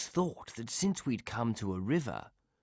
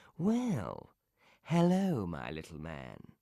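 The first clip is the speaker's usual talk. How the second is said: slow, sly, silky-smooth voice; 6 semitones lower than usual. Reading a tale, the Fox greets the gingerbread man: voice smooth as silk. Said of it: "said the Fox with a voice as smooth as silk".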